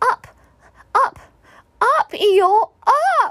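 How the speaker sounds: shrill, very high tiny voice shouting all-out. Reading a children's story aloud, voicing a character shouting at the top of his little voice. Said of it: "he shouted at the very top of his little voice".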